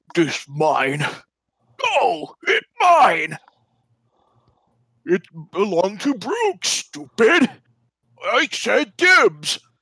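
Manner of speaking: high, loud ogre shout. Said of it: "and they say".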